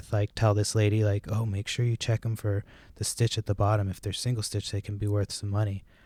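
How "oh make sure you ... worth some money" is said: mock muttered whisper under the breath. Retelling what a guy told the lady, imitating a whisper under his breath. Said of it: "kinda whisper, like, under his breath".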